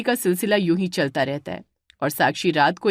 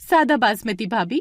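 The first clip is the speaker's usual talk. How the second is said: usual speaking voice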